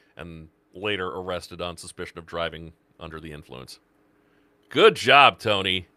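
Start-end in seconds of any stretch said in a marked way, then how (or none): 4.7-5.8 loud, pointed, ironic, sarcastic tone. Reacting to a news report of an arrest: sarcastic. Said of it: "That's the sarcastic good job".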